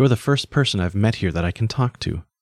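plain reading voice

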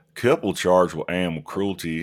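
very loud, put-on Louisiana accent. Reading a news headline aloud, trying a put-on Louisiana accent. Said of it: "I'm going to try to read this in my Louisiana voice".

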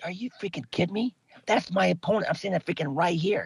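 mock-angry tone. Retelling getting dressed while an opponent chats nearby, retelling being mad. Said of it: "I was so mad".

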